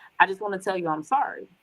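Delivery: ordinary delivery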